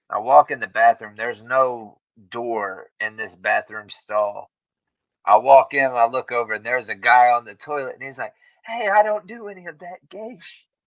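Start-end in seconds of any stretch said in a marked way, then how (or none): 8.6-10.6 put-on yelling man voice, higher. Retelling what a man on a gas station toilet said: imitating a man yelling. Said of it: "And he's yelling at me".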